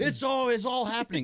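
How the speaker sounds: play-acted slow, very high, excited announcing. Retelling people running down the halls announcing news: imitating excited announcement. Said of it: "Her voice on that was awesome".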